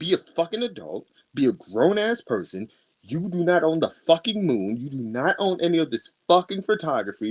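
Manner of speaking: put-on, mock-angry, furious ranting tirade. Retelling what she said to someone at an event, retelling an angry rant. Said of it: "she's never seen me mad".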